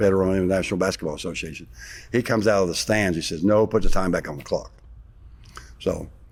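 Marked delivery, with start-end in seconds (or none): none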